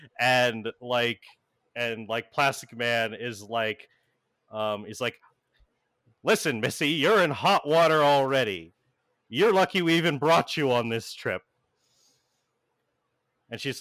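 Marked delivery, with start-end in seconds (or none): 6.3-11.4 stern, harsh, berating scolding tone. Voicing a character berating a teenager: berating a teenager. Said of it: "berating this teenager".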